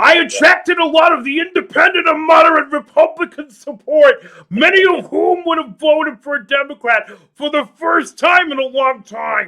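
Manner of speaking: very high, very loud, belted rally oratory. Quoting a politician's statement about winning voters: Bernie Sanders impersonation. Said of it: "That's my attempt at a, a Bernie Sanders, uh, impersonation".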